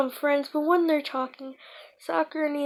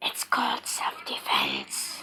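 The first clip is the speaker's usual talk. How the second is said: put-on demon voice, lower and quieter; 5 dB quieter than usual. Acting out Naruto's lines in a story summary: Kurama demon voice. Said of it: "Naruto says in his demon voice".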